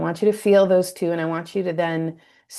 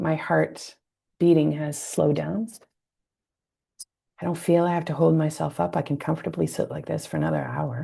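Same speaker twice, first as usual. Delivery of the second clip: lower voice, quieter; 3 dB quieter than usual. Speaker noticing how their body responds during the exercise, in a lower voice. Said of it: "I'm noticing my voice is lower".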